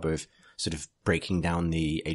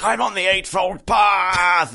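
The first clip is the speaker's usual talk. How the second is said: very loud, very high bellowing roar, path stretched; 14 semitones higher, 9 dB louder than usual. Describing a character's entrance in Galaxy in Flames: Khan's bellowing battle shout. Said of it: "he bellows like".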